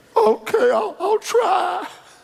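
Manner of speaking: acted out, quavering, very high, slow, drawn-out. Retelling a woman's reply after being scolded, imitating a trembling voice. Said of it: "her lips began to tremble".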